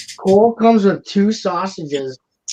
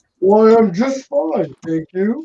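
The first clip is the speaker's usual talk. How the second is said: unconvincing, inaccurate put-on woman's voice, pitched high; 5 semitones higher than usual. Answering a greeting in place of Ingrid, who just joined, with a bad Ingrid impression. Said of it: "That's not even how she sounds at all".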